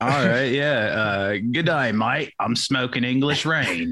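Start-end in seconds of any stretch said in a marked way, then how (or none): 1.4-3.9 put-on, high, jokey Australian accent. Talking with friends while high, he tries a line in a mock Australian accent. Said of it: "I said in Australian".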